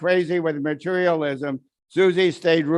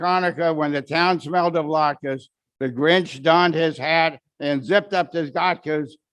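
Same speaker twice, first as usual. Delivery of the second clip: ordinary delivery, nothing marked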